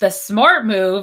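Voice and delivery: slow, sarcastic drawl.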